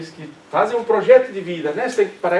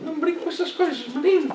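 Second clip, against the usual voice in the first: put-on very high-pitched voice with European Portuguese accent; 10 semitones higher, 4 dB quieter than usual. Retelling a parent's warning not to joke about death, portuguese accent. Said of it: "Eu posso falar em sotaque português".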